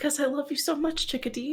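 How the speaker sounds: weeping, tearful, crying voice. Voicing a character with tears streaming down her face, crying. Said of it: "Mama, why are you crying?".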